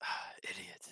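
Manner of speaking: mumbled aside under the breath. Speaker's character moves away and insults someone: muttered under breath. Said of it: "mutter underneath my breath".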